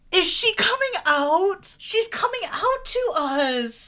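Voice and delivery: very high, sarcastic-sounding, hard-to-read tone. Reacting as someone unexpectedly comes out to the group, sarcastic-sounding. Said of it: "I know that that sounded sarcastic".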